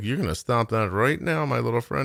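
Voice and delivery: quiet, muttered under the breath. Retelling a warning to a child who insulted their son: retelling a quiet under-breath threat. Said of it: "said something very quietly under my breath".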